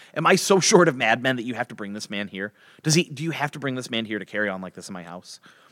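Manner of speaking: normal talking voice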